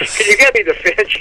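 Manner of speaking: ordinary talk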